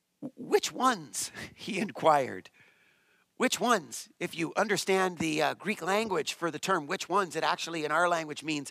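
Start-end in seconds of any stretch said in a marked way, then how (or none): 0.4-1.3 mock shocked, startled, caught-off-guard voice. Explaining a Bible passage, voicing a character's question, acting out surprise. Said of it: "you can hear the surprise in the rich young ruler's voice".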